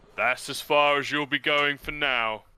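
loud gnoll creature voice. Narrator voicing a large gnoll stepping out to block the travelers: deep gnoll voice. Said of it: "A deep voice".

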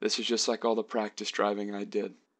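ordinary delivery

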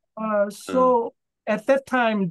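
usual speaking voice

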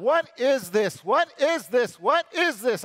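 anguished, high, loud sobbing cry. Retelling a moment of chest pain, imitating own past sobbing. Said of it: "this sobbing that I'm doing".

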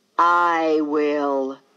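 strange voice, said loudly. From where the woods meet the yard, a strange voice answers her: said loudly. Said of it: "a strange voice said loudly".

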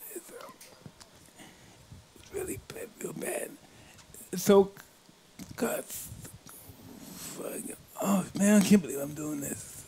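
hushed, breathy, tearful crying, barely holding together. Recalling Holmes beating Ali, the speaker breaks down crying. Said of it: "Excuse me if I cry".

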